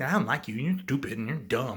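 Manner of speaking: ordinary talk, nothing marked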